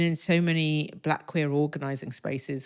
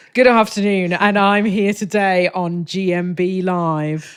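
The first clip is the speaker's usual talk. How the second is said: put-on news presenter delivery; 4 semitones higher, 10 dB louder than usual. Teasing the other speaker for sounding like the news, pretending to present: mock newsreader voice. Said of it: "You sound like you're about to deliver the news".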